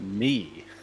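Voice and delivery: "me" said with stress. Repeating another character's line to the group, with stress on "me". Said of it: "Emphasis on me".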